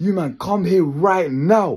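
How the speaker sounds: acted urgent, commanding, high, demanding shout. Retelling a friend shouting from downstairs, imitating him shouting. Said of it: "He was like shouting at us".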